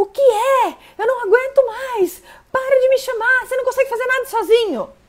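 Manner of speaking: very high, frazzled, overwhelmed mom voice at limit. Acting out an overwhelmed mother snapping at her child: stressed, overwhelmed mother. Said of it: "Essa mãe estressada".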